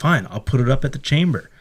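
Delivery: ordinary delivery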